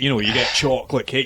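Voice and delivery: ordinary talk, nothing marked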